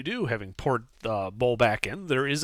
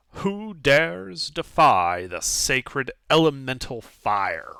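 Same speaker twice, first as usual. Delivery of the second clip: disembodied echoing voice ringing through the room. Narrating the game, the speaker voices a voice echoing through the room: booming voice. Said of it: "A booming voice echoes throughout the".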